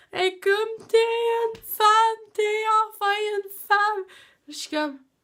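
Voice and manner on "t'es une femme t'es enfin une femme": mock tearful crying, higher and louder. Retelling what a crying mother said: imitating mother crying. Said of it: "ma mère part à pleurer".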